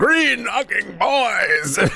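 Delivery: high, slow, boisterous bellowing shout.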